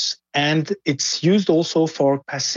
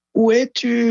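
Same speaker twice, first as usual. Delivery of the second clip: very high, carrying shout; 9 semitones higher than usual. Showing how a French question sounds at distance: shouting. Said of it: "I can shout that".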